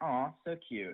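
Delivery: mock unmoved voice with zero feeling. Retelling a daughter's reaction to a teddy bear: imitating a flat unexcited voice. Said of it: "no emotion in her voice".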